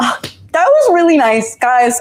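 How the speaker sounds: swooping voice, on the verge of tears. Thanking the guys, on the verge of tears. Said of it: "Oh no, I'm gonna cry".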